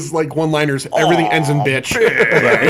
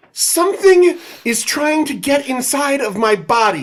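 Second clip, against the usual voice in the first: whiny put-on voice, higher; 9 semitones higher than usual. Reading a movie character's lines aloud, imitating Jesse's whine. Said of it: "I'm gonna try to do it like Jesse".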